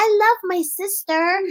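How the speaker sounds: creepy put-on little-kid voice, high. A parent imitating her naive youngest child: creepy voice of the baby. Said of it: "You got that creepy ass voice".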